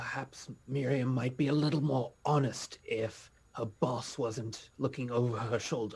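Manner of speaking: hushed, whispered voice. Speaking in character to two companions beside them: whispering. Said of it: "I whisper to the left and to the right".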